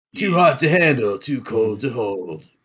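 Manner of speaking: slow, drawn-out delivery. Trying the impression after asking how it was done: Macho Man impression. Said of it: "Gotta fry your voice a little bit".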